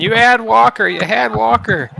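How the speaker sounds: put-on high, hoarse, rough, drawn-out screaming. Commentating a game, imagining the player's reaction: imitating Heavy screaming. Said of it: "I would just be screaming".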